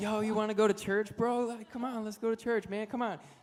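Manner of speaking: very high, loud street hollering. Retelling how a kid called to passing college kids: imitating someone yelling. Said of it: "he's yelling at college kids walking by".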